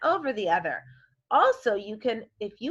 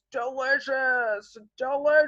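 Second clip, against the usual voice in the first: hungry-sounding voice; 3 semitones higher than usual. Speaker leads a word lesson and has listeners say delicious: hungry voice. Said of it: "get your hungry voice out".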